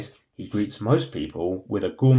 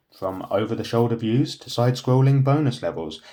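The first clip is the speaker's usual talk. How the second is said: normal talking voice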